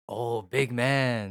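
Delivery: mock sarcastic tone. Explaining how someone says big man, in a mock-sarcastic tone. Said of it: "it's like sarcastic".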